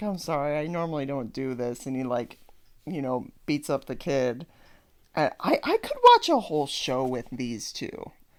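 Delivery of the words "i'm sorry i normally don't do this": put-on embarrassed bully voice, lower and quieter. Retelling a cartoon scene, imitating embarrassed Nelson. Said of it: "all embarrassed".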